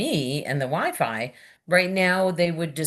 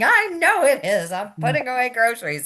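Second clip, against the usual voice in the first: play-acted, exasperated, high swooping hollered voice; 8 semitones higher, 3 dB louder than usual. Retelling answering her husband about the open fridge, retelling her own yell. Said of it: "And I'm yelling".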